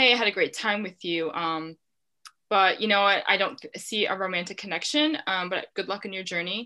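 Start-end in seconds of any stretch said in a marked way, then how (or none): none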